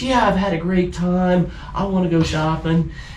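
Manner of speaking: put-on voice, high and chirpy.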